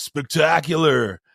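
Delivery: raspy California surfer voice. Retelling meeting Flash, the speaker does his raspy surfer voice. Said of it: "like raspy, like surfer voice".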